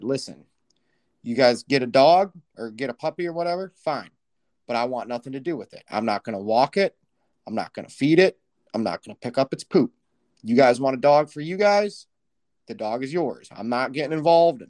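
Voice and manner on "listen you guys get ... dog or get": usual speaking voice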